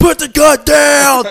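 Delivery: frantic, panicked yell, very high in pitch. Describing a movie scene where characters yell over guns, imitating frantic yelling. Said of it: "they're like frantically".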